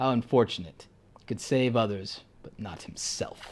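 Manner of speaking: soft, quiet, low-key, dark evil emperor voice. Quoting Star Wars, the speaker does his Palpatine impression. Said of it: "that's my uh my uh Darth uh Sidious".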